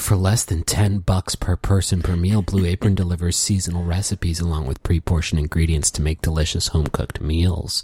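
very low, sultry, sexy voice. Speaker reading ad copy as a joking bit: sexy voice. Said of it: "you can use a sexy voice and be like".

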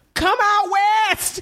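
put-on, re-enacted screaming. Retelling calling from a car window to a woman with groceries; retelling a scream. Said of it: "I literally screamed to this woman".

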